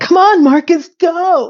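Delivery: put-on, high, drawn-out scream. Retelling a character cheering at a TV game: imitating screaming at TV. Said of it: "she's screaming at the television".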